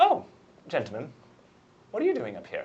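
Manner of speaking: sudden put-on British accent, sing-song. Voicing a confused character who spots two men nearby: put-on British accent. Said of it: "I don't know why my accent's British".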